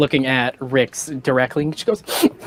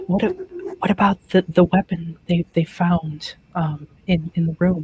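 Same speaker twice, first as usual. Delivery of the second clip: hushed whisper, higher; 4 semitones higher than usual. Voicing a character who tugs a dress and leans up to ask: whispering. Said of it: "leans up and whispers".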